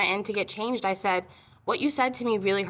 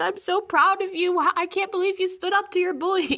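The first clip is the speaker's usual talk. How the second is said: crying, tearful, very high, proud gushing; 10 semitones higher, 4 dB louder than usual. Retelling mom's words on the phone: imitating mom crying. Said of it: "my mom started crying on the phone".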